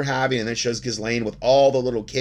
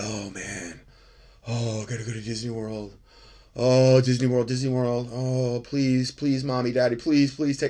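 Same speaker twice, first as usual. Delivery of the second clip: put-on childlike begging, pleading voice; 3 dB quieter than usual. Imitating a kid begging the parents to go somewhere: imitating a kid begging. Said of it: "growing up as a kid in Florida".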